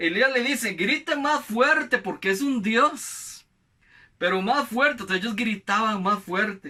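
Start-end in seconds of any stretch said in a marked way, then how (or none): 0.7-3.5 high, slow, mocking taunting tone. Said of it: "Elías empieza hasta a burlarse".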